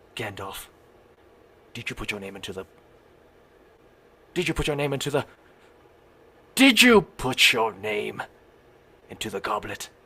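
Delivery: put-on old wizard voice. Continuing the imagined wizard fight, answering as Dumbledore: Dumbledore voice. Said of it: "And then Dumbledore's like".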